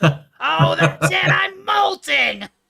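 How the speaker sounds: shrill, strained, very loud, high shriek. Trying a requested impression after warning it strains the voice, strained Gilbert Gottfried voice. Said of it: "That's a hell of a strain of a voice".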